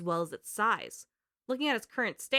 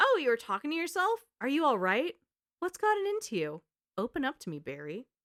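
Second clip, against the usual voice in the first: put-on worry, feigned concern, playing dumb; 3 semitones higher than usual. Retelling Jill talking to Barry: imitating Jill's acted concern. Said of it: "She acts concerned".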